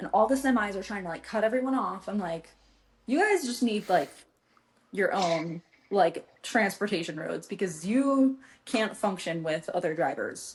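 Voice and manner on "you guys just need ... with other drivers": normal talking voice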